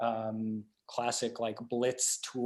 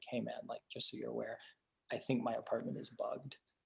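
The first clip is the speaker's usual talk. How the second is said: very quiet, half-whispered delivery; 10 dB quieter than usual. Retelling a friend's warning that his apartment is bugged: imitating someone whispering. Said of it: "kind of whispers to me".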